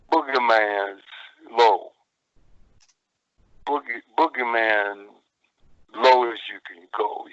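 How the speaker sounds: very slow, unhurried, drawn-out, low drawl. Retelling how he started out in an interview, talking real slow and low. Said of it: "I'm talking real slow, real low".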